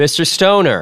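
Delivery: dry, understated. Sloan greets Stoner, half rising and pointing to a chair: dry. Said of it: "Sloane said dryly".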